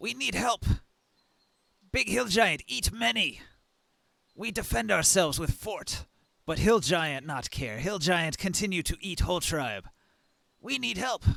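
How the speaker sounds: kobold voice speaking broken Common. Game master voicing a kobold asking the players for help: kobold speaking broken Common. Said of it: "in broken common".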